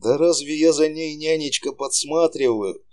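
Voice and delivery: extra affectionate, gentle, tender, voice lifted high. Sasha replies to his nanny's warning, even more tenderly. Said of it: "Еще ласковее промолвил Саша".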